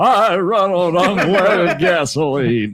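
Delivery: very slow drawl in a talking-horse voice. Repeating another speaker's line back to them: imitating Mister Ed voice. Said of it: "You said it like Mister Ed".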